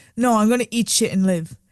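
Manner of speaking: ordinary talk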